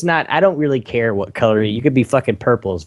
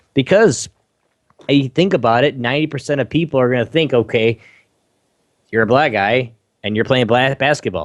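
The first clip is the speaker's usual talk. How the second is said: normal talking voice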